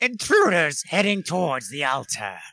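high shouted yell in a character voice. Playing a game, the character yells a warning to everyone, yelling in character voice. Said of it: "That was a great voice".

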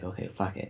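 whispered, defeated, giving-up tone. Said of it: "it's like".

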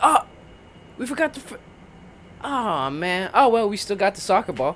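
casual, unbothered, totally easygoing, tossed-off tone. Imitating Matthew McConaughey's reaction: casual Matthew McConaughey impression. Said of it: "He said it with such casualness".

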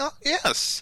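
very high voice, breaking and cracking. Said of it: "my voice kinda cra-".

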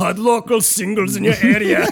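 put-on loud, high, booming Austrian accent. Joking about choosing a Pornhub ad voice, in an Arnold Schwarzenegger voice. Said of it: "change my ad voice to male Austrian. Arnold Schwarzenegger".

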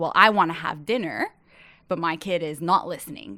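plain

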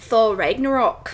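amateur attempt at an Australian accent. Admitting they can only say a few words in australian, then trying: attempted australian accent. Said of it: "That's my best Australian work".

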